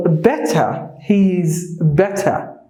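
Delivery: slow British accent, t in better fully sounded. Showing learners the British way of saying a phrase: British accent. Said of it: "That is the British English".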